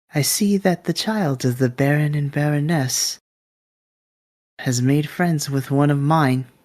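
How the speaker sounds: very light, airy, all-air voice. Narrator voicing an unseen figure behind a player character, very airy voice. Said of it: "you just hear this very airy kind of voice go".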